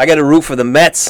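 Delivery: New York accent impression. Doing a timed impression for a friend, New York accent impression. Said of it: "So I got an impression of this".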